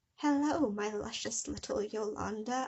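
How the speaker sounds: rough attempt at a cartoon creature voice. Narrating a story, voicing the caller on the phone: a Salad Fingers voice. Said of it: "I can't do a Salad Fingers voice".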